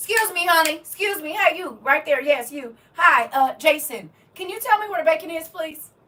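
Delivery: very high, very loud, authoritative, commanding tone. Acting out how they ask a stranger in a store: imitating a commanding request. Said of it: "it's commanding, even asking".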